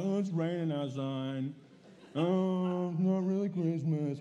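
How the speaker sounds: slow, put-on unenthusiastic, zero-excitement delivery. Mimicking listeners who don't sound excited about christmas: imitating an unexcited crowd. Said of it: "You don't sound that excited".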